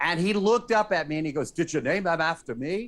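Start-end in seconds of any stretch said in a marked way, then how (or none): 1.5-2.9 terrible, badly done put-on Irish accent. Retelling a press event, the speaker quotes with a horrible Liam Neeson Irish accent. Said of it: "That was a horrible Irish accent".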